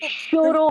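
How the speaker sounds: playful teasing tone. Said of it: "that's how you have to say it".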